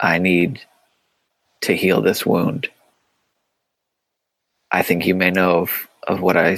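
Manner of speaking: hushed whisper. Playing a character confessing a wrong to someone in the scene, in a whisper. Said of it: "And in like a whisper say like".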